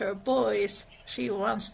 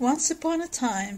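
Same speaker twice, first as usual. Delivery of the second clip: ordinary delivery, nothing marked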